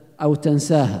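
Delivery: plain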